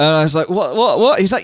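ordinary talk, nothing marked

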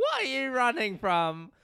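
put-on very loud, swooping, botched British accent. Retelling what a man asked them, in an attempted british accent. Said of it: "I'm trying to do British".

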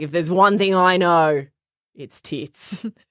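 put-on broad, thick outback Australian accent, laid on. Retelling what a lady from Alice said, in a broad Australian accent. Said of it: "real deep in their Australian accent".

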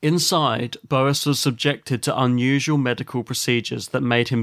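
plain

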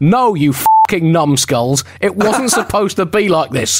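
half-shouted, mild, acted-out ranting yell. Imagining an angry figure orbiting over America: imitating George Washington shouting.

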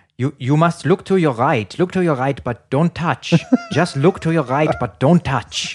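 put-on German accent. Retelling what the DJ said before pressing a button, do DJ Andy in a German accent. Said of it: "I have to get my German accent".

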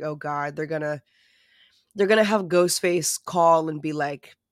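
normal talking voice

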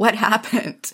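acted screaming. Recounting a phone call from someone who had just crashed his car, retelling a scream. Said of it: "I immediately started screaming".

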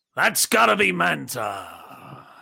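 high, swooping, creaky, stretched-out drawl. Answering a viewer's request to say a new catchphrase: Vince voice. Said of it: "in your best Vince voice".

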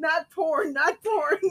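high-pitched yelling broken up by laughter.

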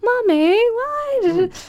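put-on very high, slow, innocent yet creepy little-kid voice. Describing how the children in Happiness talk, innocent high-pitched creepy child voice. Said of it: "quite innocent, quite high-pitched voice that's quite creepy".

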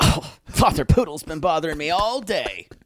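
put-on aggrieved, griping, complaining voice. Imitating the other speaker's mother complaining about the father: imitating the mother complaining. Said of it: "she would then start complaining".

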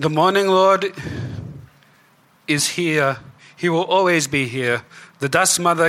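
high, loud, fervent calling out. Voicing a priest defending his god to questioners: crying out. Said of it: "Donovich kind of cries out".

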